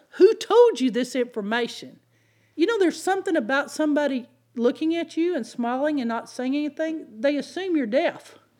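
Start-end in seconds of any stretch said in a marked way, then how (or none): 0.2-2.0 mock yelling. Speaker acts out a man who got out of his seat and in their face, retelling a man's yelling. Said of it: "he starts yelling".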